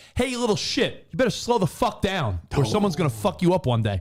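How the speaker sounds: heated, hot-headed, aggressive angry voice. Retelling confronting a speeding driver at a red light: retelling own angry outburst. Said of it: "it sounds like you were all chalked up".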